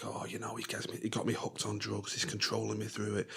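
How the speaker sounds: very quiet, soft, hushed half-whisper. Retelling what a woman in an episode told the camera: imitating someone half-whispering. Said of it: "she's whispering to the camera saying".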